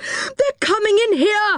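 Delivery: shrieking, shrill yell pitched very high. Moonface, seeing the toys pour down the ladder after them, yelled. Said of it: "yelled Moonface".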